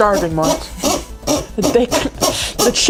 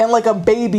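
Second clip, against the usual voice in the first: normal talking voice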